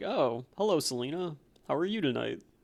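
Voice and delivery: dorky, smooth playboy voice. Showing how Bruce Wayne sounds, a second try: Bruce Wayne voice. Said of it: "I think Bruce sounds kinda like this".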